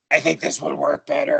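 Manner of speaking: really gravelly, raspy, rough voice. Describing a man who hooks it onto the leather, then speaks in a gravelly, raspy voice. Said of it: "just like a really gravelly, raspy voice".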